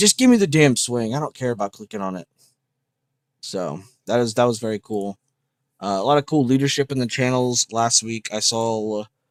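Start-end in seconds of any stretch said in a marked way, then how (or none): none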